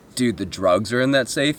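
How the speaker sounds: plain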